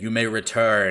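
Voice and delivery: very loud, thunderous, booming scream. Narrating a scene, voicing the lord after a character bows, booming, screaming voice. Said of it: "his booming voice screams aloud".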